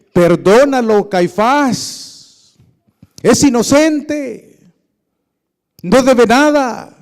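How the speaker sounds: hoarse, terrifying, loud, drawn-out shout. Narrating a man in the story crying out to Caifás: hoarse, terrifying shout. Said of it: "una voz ronca, un grito aterrador".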